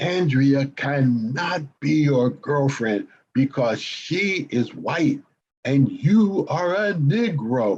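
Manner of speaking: mock teacher voice, slow, deliberate and pointed. Retelling what the teacher said to the whole class: imitating a teacher's loudest voice. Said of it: "in her loudest voice".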